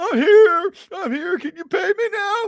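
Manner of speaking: put-on high-pitched, loud blubbering through sobs. Speaker mocks a man who walked up asking to be paid, imitating someone crying. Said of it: "just crying like".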